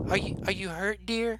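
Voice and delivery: high, soft, kindly, motherly voice. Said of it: "she looks up and she says".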